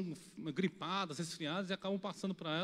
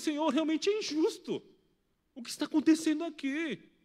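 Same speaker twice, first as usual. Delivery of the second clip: raised, pitched-up crying out; 8 semitones higher, 8 dB louder than usual. Speaker retelling how they also cried out to god, retelling crying out to god. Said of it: "Eu também gritei por Deus".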